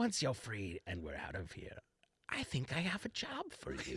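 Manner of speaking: soft, hushed, secretive half-whisper. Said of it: "And I'm gonna whisper".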